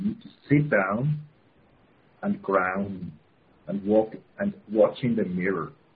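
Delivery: unhurried, halting, grounded delivery with pauses. Guiding listeners through a first step, speaking slow and grounded. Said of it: "I begin now to talk slow".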